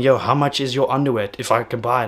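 plain

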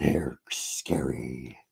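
low, very slow creepy whisper.

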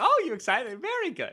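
very high, up-inflected, rising voice. Speaker shows how he sounds talking to his daughter: voice for talking to a child. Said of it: "It's like me talking to my daughter".

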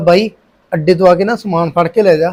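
plain

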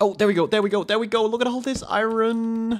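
thrilled cheer, high and loud.

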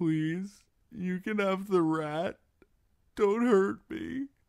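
feeble, thin, weak, very high squeaky voice. A long-held prisoner pleads with the boys holding the torch: thin weak voice. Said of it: "his voice thin and weak".

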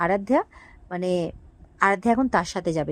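normal talking voice

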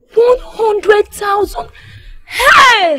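screaming in shock. Hearing the 100,000 figure for the mother, screaming in shock. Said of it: "Why are you screaming?".

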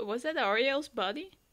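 normal talking voice

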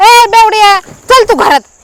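fake, put-on quarrelsome arguing tone.

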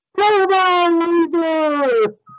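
very high robotic modulator yell, stretched. Retelling a scene where a character's faulty voice modulator amplifies him: imitating an amplified modulated shout. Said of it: "his voice modulator like pumps amplified".

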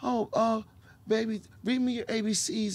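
soft tender talk. Acting out talking gently to a small daughter: acting out a gentle tone. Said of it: "be gentle and to be like".

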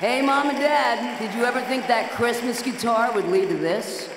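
loud, high call rising upward.

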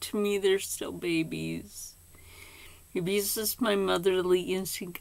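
teary voice, close to tears, welling up. Grandmother, tired from staying up for the babies' toys, talks about them: close to tears. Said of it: "now I'm going to cry".

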